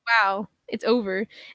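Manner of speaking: ordinary talk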